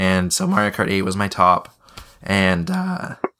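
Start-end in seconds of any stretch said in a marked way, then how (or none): 2.2-3.1 voice cracking up into a high pitch. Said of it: "I'm losing my voice".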